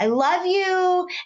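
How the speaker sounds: sky-high, squealing, high-pitched scream. Retelling what she screamed from the other bed, imitating someone screaming. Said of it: "And she just screams".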